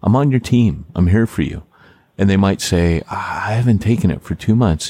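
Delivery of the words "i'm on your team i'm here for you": calm, gentle, kind, soothing tone. Showing how to reassure an anxious person, gentle and soothing. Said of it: "really gentle and soothing".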